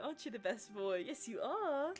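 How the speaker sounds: light, slow, put-on British accent. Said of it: "His little British accent".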